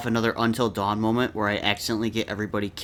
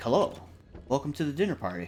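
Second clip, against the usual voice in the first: grand, swooping, sing-song villain voice; 4 semitones higher, 6 dB quieter than usual. Guessing what the villain will say at the door: imitating the house's villain. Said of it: "He's gonna be like".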